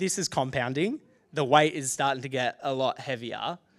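usual speaking voice

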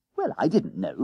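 ordinary talk

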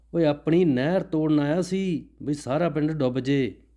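speaking loudly. Basanta answers old Baba Gurmukh close to his ear, in a loud voice. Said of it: "ਉਵੇਂ ਉੱਚੀ ਆਵਾਜ਼ ਵਿੱਚ".

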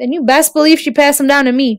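plain

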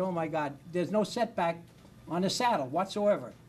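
ordinary delivery

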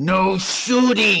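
snarl. In a tabletop game, asked what her character does next, she answers snarling. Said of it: "She just snarls".

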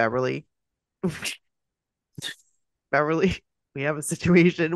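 words breaking up with laughter throughout. Repeating a line the speakers always quote together: laughing while talking. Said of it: "We can't even say it without laughing".

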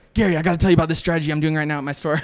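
rushed, too-fast talking. Recalling being a guest on the Gary Vee show, retelling talking way too fast. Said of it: "talked way too fast".

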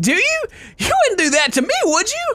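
bright, loud cheerful voice.

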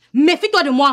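ordinary delivery

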